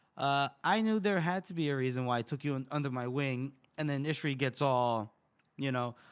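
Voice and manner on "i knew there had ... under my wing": ordinary talk, nothing marked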